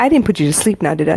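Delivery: ordinary talk, nothing marked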